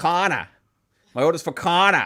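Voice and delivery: put-on heavy Boston accent, laid on thick. Retelling a man answering whose order it is, thick Boston accent. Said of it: "He had the thickest Boston accent I ever heard".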